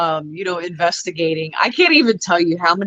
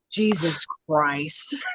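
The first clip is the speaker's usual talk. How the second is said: utterly unamused, exasperated outburst; 2 semitones lower, 3 dB quieter than usual. Retelling his reaction in a jail cell when Scott farts: retelling an unamused exclamation. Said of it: "it didn't even sound like I was entertained whatsoever".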